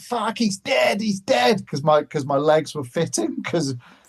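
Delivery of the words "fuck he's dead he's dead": mock yelling, a high-pitched shout. Retelling how a friend reacted to a crash: imitating someone shouting. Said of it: "was shouting".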